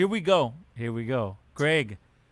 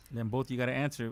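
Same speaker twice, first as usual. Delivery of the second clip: soft, low, sad, somber delivery. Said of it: "Don't be so sad about this".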